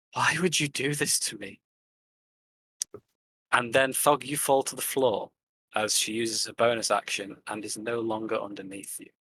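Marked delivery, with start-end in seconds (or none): 0.2-1.6 quivering, shaky stage whisper. Game master voicing a character who whispers to Thog, whispering, voice quivering. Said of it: "a quiver in her voice ... she just whispers".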